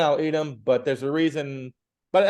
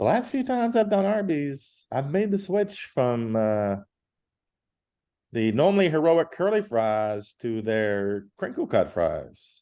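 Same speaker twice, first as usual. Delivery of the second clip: put-on slow, sultry, sexy voice. Describing switching fast-food fries, talking slowly and sexily like Mike Lisk. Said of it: "talking slowly and sexily like I'm Mike Lisk".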